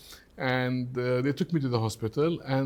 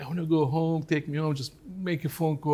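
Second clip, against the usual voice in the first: mild, restrained, held-back scream; 3 semitones higher than usual. Retelling begging to go home from a locked hospital ward: imitating own screaming. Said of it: "And I was screaming, like".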